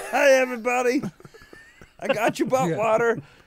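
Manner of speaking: very high, squeaky, loud talking-object voice. Imagining how a bidet would talk if it were humanoid: humanoid bidet voice. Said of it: "that's what all bidets sound like if they were humanoid".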